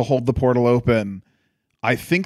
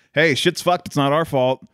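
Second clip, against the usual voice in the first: ordinary talk, nothing marked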